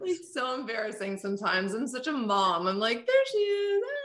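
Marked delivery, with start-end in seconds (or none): 3.1-3.8 put-on very high baby-talk voice. A podcast host repeats her greeting to her guest Britney: baby voice. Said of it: "why did I say it like a baby?".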